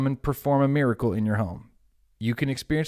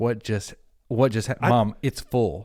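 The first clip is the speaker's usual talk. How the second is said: plain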